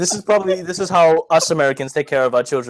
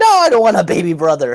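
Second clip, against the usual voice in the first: put-on shrill, shrieking child's tantrum scream; 4 dB louder than usual. Acting out how a child might react to a new sibling: imitating a child's screech.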